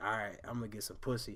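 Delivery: low, soft mutter.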